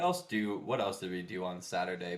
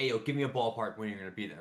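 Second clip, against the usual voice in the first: ordinary delivery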